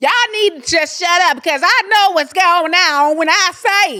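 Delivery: high-pitched, loud, stern no-nonsense scolding tone. Showing how a loud reality star talks: imitating Nene Leakes. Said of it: "She talks like this".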